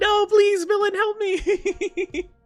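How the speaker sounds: mock desperate pleading, fake begging tone. Acting out being dragged away while clawing at the floor: mock desperate pleading. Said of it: "trying to claw at the floor".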